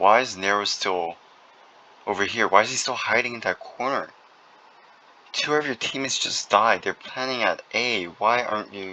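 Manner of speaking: angry, exasperated, frustrated voice. Commentating a match, upset that a player is still hiding in a corner: angry, frustrated. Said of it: "I'm really mad right now".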